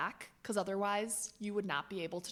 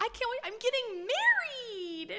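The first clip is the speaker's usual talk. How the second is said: put-on, very high, silly little voice; 4 dB louder than usual. Mocking a woman's excited words from a clip in a silly little put-on voice. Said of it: "in her stupid little voice. Was that a decent impersonation?".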